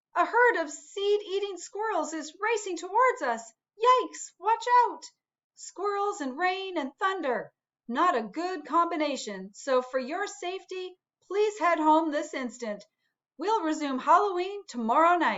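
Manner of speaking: bogus, fake alarmed announcer delivery. The narrator, who lives on a sunflower, addresses everyone: fake alarm announcement. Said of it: "I live on a sunflower in a field where everyone takes Halloween very seriously. / [name]".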